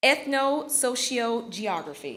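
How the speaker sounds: ethno-sociogeography said slowly, piece by piece. Reading a bio aloud, saying ethno-sociogeography slowly, broken into parts. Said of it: "I had to say this slowly".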